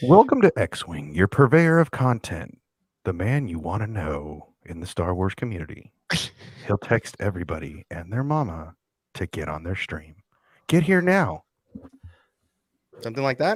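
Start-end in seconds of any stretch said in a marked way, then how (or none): 0.0-11.4 soft commercial announcer voice. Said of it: "your commercial voice is just, it's so soft".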